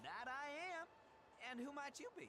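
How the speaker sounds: put-on country accent. Answering a traveler who asks his name: country accent. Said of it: "he got that accent on him".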